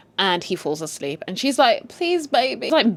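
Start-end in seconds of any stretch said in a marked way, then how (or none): 1.9-2.7 pleading, coaxing, needy begging tone. Retelling a scene where a wife begs her sleeping husband: imitating a begging plea. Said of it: "begging him for sex".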